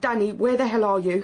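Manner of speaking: put-on scream, only sketched, mild and toned down. Retelling leaving phone messages for someone gone: imitating own past screaming. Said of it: "I was screaming".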